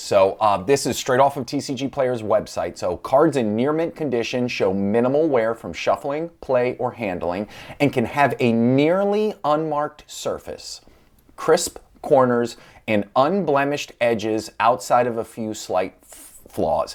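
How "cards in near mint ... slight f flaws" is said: slow, deliberate, carefully paced reading aloud. Reading a card condition definition from a website aloud, reading slowly on purpose. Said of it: "I read that slowly on purpose".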